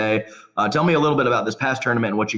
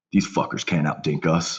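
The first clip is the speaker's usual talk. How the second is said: put-on light mutter under breath, much lower; 5 semitones lower than usual. Speaker quotes his teammate after winning a long rally, retelling a mutter under breath. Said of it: "under his breath lightly just says".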